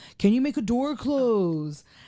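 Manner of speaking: high, slow, called-out voice.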